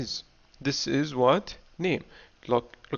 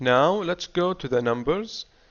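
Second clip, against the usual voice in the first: ordinary delivery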